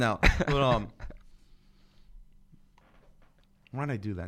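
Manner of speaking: barely able to speak. Right after trying an impersonation for the audience, struggling to speak. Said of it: "Now I can't even speak".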